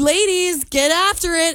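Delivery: plain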